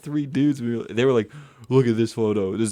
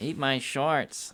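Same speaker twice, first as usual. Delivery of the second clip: put-on cartoon boy voice; 3 semitones higher, 6 dB quieter than usual. Doing a Bart Simpson voice when asked: Bart Simpson voice. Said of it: "do your best Bart Simpson".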